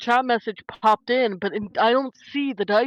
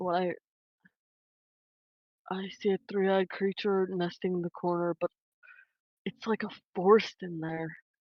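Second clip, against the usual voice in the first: whispered, lower and quieter; 3 semitones lower, 7 dB quieter than usual. Describing a creature seen nesting in the corner in character: whispering. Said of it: "She's whispering this".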